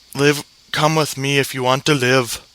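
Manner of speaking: put-on voice slides into an Indian accent. Quoting another movie line, impression slipping: Schwarzenegger impression sounding Indian. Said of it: "that sounded Indian".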